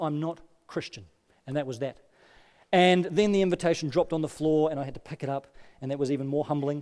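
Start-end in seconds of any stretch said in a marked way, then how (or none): 0.0-1.0 put-on emphatic voice, quieter. Retelling a coworker's reply to an invitation: imitating an emphatic statement. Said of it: "she just said very emphatically".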